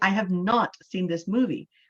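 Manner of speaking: hard, aggressive, forceful stress on the word not. Showing how stressing a word changes a sentence, strong emphasis on not. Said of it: "It sounds more angry. It sounds more aggressive".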